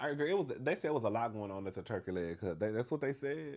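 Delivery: ordinary talk, nothing marked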